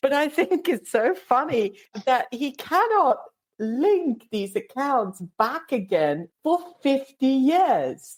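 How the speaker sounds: high-pitched, laughing through the words. Telling others about a man's loyalty points fraud, laughing while talking. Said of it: "I'm sorry for laughing".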